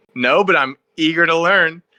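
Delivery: happy-go-lucky cheery tone. Speaker retells someone answering a police officer's question, imitating a grinning reply. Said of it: "with a big grin on his face".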